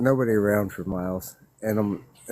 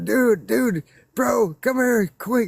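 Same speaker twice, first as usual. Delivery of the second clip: very high, urgent, desperate scream; 13 semitones higher, 4 dB louder than usual. Retelling hearing footsteps coming up the hill: retelling screaming at brother. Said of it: "I start screaming at my brother".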